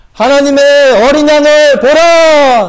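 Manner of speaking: loud, high, drawn-out cry. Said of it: "하고서 외쳤습니다".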